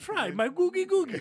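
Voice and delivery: very high, loud, shrill fake Indian accent. Retelling a sitcom scene, imitating a put-on Indian accent. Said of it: "In different inflections".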